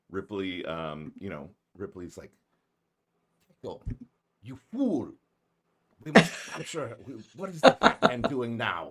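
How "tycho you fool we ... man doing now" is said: loud, high secret-agent cat character voice. Voicing a pet cat imagined as a secret russian agent, cat as russian secret agent. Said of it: "both secret Russian agents".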